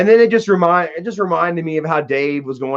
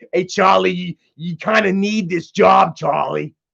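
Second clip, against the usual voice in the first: rough, creaky put-on character voice; 3 semitones higher than usual. Imitating how Dave talks to Charlie: imitating Dave's voice. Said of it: "the Charlie voice, the Dave voice".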